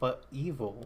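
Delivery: plain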